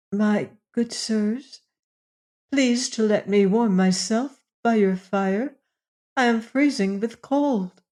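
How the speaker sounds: shy, fearful, timid voice. Reading a fairy tale, a frightened girl asks strangers for warmth: timid voice. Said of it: "saying in a timid voice".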